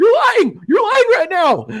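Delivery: very high, shrill, swooping scream. Retelling a podcast argument, imitating Bert Kreischer screaming. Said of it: "he's screaming in the microphone".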